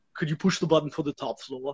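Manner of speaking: put-on Austrian accent. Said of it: "my poor attempt at an Arnold Schwarzenegger".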